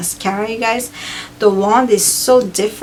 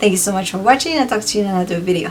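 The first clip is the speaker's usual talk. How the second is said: very fast, rushed speech. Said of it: "I'm sorry if I'm talking super fast".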